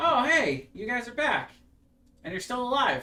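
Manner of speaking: put-on very high, loud, bouncy, eager boyish excitement. Voicing a young lad opening the door to returning visitors: enthusiastic young lad. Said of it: "a very enthusiastic young lad".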